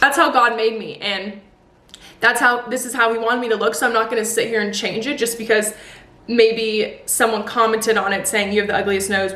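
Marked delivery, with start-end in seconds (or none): 0.0-3.7 choking up, near tears, on the verge of crying. A YouTuber talking to viewers after an emotional few days, choking up. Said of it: "I don't know why I'm gonna cry".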